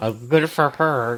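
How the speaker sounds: spoken through clenched teeth, jaw locked. Describing their shared reaction to news about her, acted through clenched teeth. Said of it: "say through our clenched teeth".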